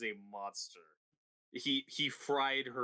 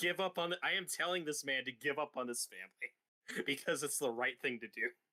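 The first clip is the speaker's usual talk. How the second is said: ordinary talk, nothing marked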